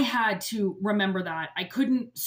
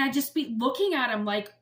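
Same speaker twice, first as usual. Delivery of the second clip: usual speaking voice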